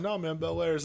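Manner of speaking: ordinary delivery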